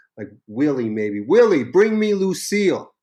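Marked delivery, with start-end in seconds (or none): 1.2-2.8 mock high hollered shout. Recounting a session, the speaker quotes him calling to his bus manager: retelling a scream. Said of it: "And so he screams".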